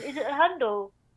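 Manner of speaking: put-on old grandma voice, like a little old woman. Unsure what an Instagram handle is, mocking herself: old grandma voice. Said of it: "I sound like a grandma going".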